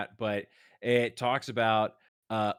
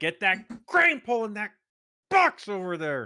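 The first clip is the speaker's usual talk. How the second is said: very high, swooping, barked yelling; 10 semitones higher, 3 dB louder than usual. Voicing a character who walks off and starts yelling: yelling orders. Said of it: "walks off and starts yelling".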